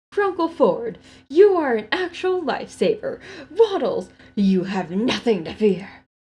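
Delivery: relieved, thankful, grateful character voice. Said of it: "say it in her voice".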